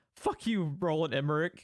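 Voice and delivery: ordinary talk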